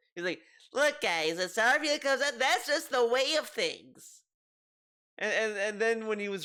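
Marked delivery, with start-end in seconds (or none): 0.7-4.2 high, condescending lecturing tone. Retelling how a man explained things as if to people who never heard of it: mock-condescending tone. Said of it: "he said it in such a condescending way".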